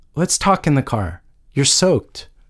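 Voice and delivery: plain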